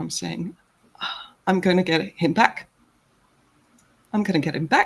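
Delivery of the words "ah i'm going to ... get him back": tearful, weeping, crying through the words. Playing a crying character who grimaces, then smiles: grimacing smile while crying. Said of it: "it looks like I'm grimacing, but then you realize I'm smiling".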